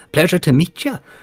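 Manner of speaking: very high, very loud, shrill put-on voice. Voicing a Kenku who mimics another character's greeting: imitating Riley's voice. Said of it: "in your own voice".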